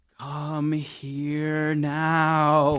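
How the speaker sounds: eerie whispered voice. A boy closes his eyes and calls his friend, spooky whisper. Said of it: "whispered, ... in a spooky voice".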